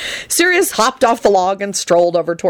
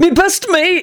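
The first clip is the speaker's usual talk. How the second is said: very high, strangled out through laughter; 12 semitones higher than usual. A character in fits of laughter with a friend calls out, choking out the words. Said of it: "Benji choked out".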